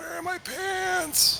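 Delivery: very high-pitched put-on old-person voice. Trying out a voice another speaker does for their kids, doing a put-on old person voice. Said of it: "There's a voice I do for my children".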